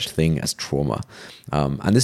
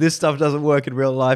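put-on cocky, brash young know-it-all student voice, pitched up; 9 semitones higher than usual. Acting out the student scoffing at the philosopher: imitating a brash young student. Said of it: "the student will be like".

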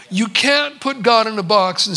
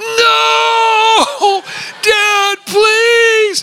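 put-on very high, frightened, crying, shouting child voice, pleading; 13 semitones higher, 6 dB louder than usual. Retelling a son hanging from a tree branch: imitating a crying scared child. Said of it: "he's crying 'cause he's afraid".

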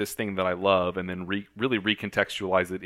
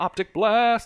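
put-on screaming superhero voice, higher and louder; 7 dB louder than usual. Imitating Cyclops in the cartoon: imitating Cyclops screaming. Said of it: "he screams, like".

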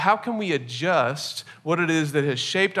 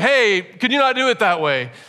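loud, raised voice, pitched up; 5 semitones higher, 5 dB louder than usual. Retelling asking a partner over a running vacuum: imitating asking loudly. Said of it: "probably loudly, 'cause the vacuum was on".

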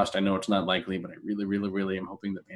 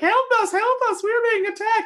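put-on little-girl voice, much higher, slower; 5 dB louder than usual. Recalling a game host who suddenly plays a little girl on the island: little girl voice. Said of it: "he's like a little girl".

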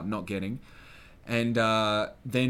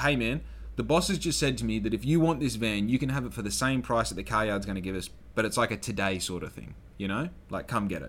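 usual speaking voice

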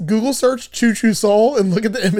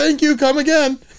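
play-acted, high-pitched, yelled-out call; 7 semitones higher than usual. Retelling what a woman yelled out as the speaker left, retelling a yell. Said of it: "she yelled out".

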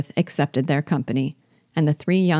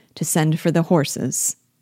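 plain reading voice

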